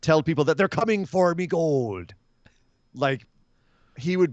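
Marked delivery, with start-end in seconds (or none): 0.0-2.1 put-on thick Irish accent. Joking about what a wrestler might say: thick Irish accent. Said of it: "with a really thick Irish accent".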